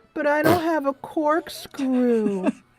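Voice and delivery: tiny cute voice, high and very slow. Retelling a friend's phone call: imitating Shirley's cute little voice. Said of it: "in her cute little Shirley voice".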